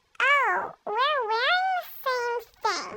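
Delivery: snotty, high-pitched bratty tone. Retelling what the fake friend said, imitating a bratty tone. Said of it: "with, like, a bratty accent".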